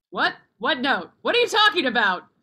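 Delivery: shouting. Answering someone who asks about the note, yelling. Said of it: "You don't need to yell".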